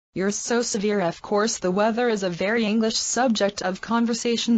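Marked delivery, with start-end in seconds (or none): none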